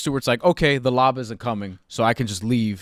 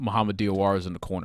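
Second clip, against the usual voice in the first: ordinary talk, nothing marked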